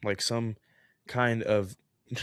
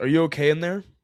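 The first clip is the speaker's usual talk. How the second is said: raised, pitched-up yell; 6 semitones higher, 5 dB louder than usual. Telling a story, a neighbor pounds on the apartment door: retelling a neighbor's yell. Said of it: "My neighbor yells".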